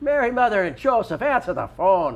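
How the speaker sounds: loud, high, ringing put-on Irish accent. Imagining a telephone ring spoken aloud as a voice, in an Irish accent. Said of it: "You should have an Irish telephone ring".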